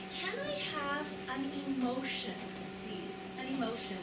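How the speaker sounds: hushed, very soft, fast whisper.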